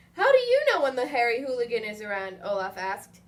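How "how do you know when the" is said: ordinary delivery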